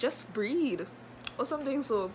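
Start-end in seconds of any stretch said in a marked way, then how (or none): 0.0-0.9 patronizing, condescending, talking-down voice. Recalling what a nurse said to her, mock-condescending nurse tone. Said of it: "in the most condescending tone ever".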